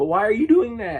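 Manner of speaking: voice cracking. Asking a guy at his computer why he's doing that, voice cracking. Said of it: "Did I just double voice crack?".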